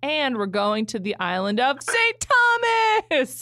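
grand, swooping, drawn-out public-address announcer delivery. Retelling an announcement of a trip to Saint Thomas: imitating a PA announcer. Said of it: "said it like he was a P A announcer".

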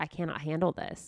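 ordinary delivery

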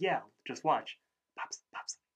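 lazy, half-hearted, zero-effort voice. Retelling a cartoon episode, Rigby tries to wake Pops: Rigby saying it very quietly. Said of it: "he says very quietly".

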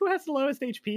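mock frantic, panicked, very high-pitched voice. Retelling asking the table a question in a past episode: imitating own panicked question. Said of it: "So I was like".

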